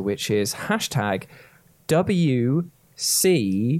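deliberately slow pace. Giving listeners the show's Twitter hashtag, saying it slowly. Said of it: "I have to say it that slowly".

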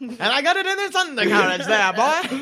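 put-on old-fashioned nineteen-forties manner. Teasing another speaker's old-fashioned word: old-timey 1940s voice. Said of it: "I didn't realize you were from the nineteen forties".

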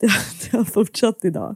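speech mixed with laughter. Telling the other speaker they kept hurting people today, laughing while talking. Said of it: "jag skrattar".

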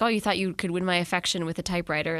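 ordinary delivery

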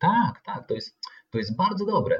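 put-on confident, high, self-assured child's voice.

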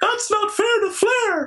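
very high-pitched, screaming protest. Retelling a wrestler's elimination: imitating Bobby Heenan screaming. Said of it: "Bobby Heenan starts screaming".

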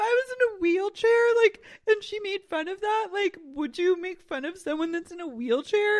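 put-on loud, very high, baby-voiced crying. Retelling what a woman said in a conversation, imitating a woman crying. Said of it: "she's, like, crying, and she's like".

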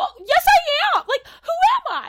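acted, screeching, very high, very loud tantrum. Retelling a cast member's outburst during an argument: imitating a temper tantrum. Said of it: "did, like, a temper tantrum".

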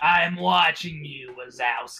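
gravelly put-on voice. Helping another speaker describe their changed voice, with a gravelly Monsters, Inc. voice. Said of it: "sound like that".

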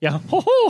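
very high-pitched cartoon mouse voice. Talking about Disney, the speaker does everybody's Mickey Mouse impression. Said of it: "that's like everybody's Mickey Mouse impression".

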